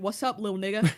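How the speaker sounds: put-on old man voice. Retelling a meme of someone's grandpa greeting a kid: imitating a grandpa. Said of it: "somebody's grandpa being like".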